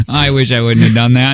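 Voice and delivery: ordinary talk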